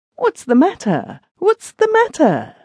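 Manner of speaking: very high-pitched stuttering repeat. A narrator reads a husband who has just seen his wife crying, stuttering. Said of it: "He stuttered".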